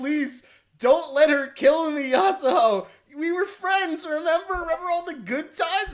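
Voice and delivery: very high, screamed, begging voice. Speaker retells how a player begged a former friend to spare him: imitating a screaming plea. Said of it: "He is like screaming".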